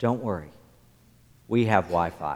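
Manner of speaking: calm, even, steady, very low voice. Recounting what they told complaining visitors, retelling a calm, steady voice. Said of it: "In a calm, steady voice".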